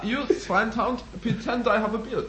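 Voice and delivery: very high German accent, put on and laid on. Acting out a man pretending to have a beard: German accent. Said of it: "your German accent".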